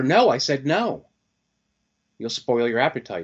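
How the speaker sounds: angry, swooping, snapping tone. Acting out a mother refusing her hungry child again; imitating a mom snapping. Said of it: "Mom snaps at her".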